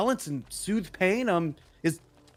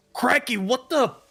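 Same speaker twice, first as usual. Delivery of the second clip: put-on elf voice, higher and louder; 7 semitones higher, 4 dB louder than usual. Voicing Shader Kai, an elf stepping out into a strange place. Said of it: "steps out of the side around and says".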